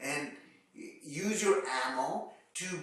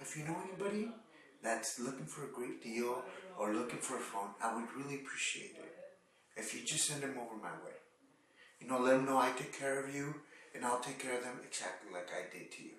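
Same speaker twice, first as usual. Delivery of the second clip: serious, important-sounding, low, hushed; 5 semitones lower, 6 dB quieter than usual. Acting out someone asking a customer for a favor before they leave; lowered voice. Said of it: "And you lower your voice".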